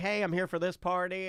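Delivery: ordinary talk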